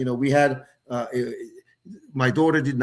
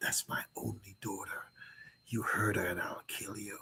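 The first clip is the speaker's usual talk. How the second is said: very hushed, threatening whisper, close and intimate; 4 semitones lower, 15 dB quieter than usual. Retelling a quiet threat to a daughter's new boyfriend: imitating his own whisper. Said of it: "And I whisper in his ear".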